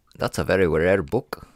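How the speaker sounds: put-on, fake South African accent. Joking about a rare book: put-on south african accent. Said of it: "That's my South African accent".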